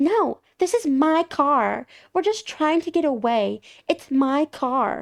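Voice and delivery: defensive yelling, hollered from a distance. Recounting a car theft, acting out a thief's reply: imitating a thief yelling. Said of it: "The one thief yells back".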